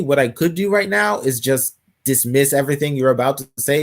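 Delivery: ordinary talk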